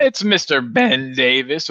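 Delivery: voice breaking. Introducing the next player to look at: voice crack. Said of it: "voice crack".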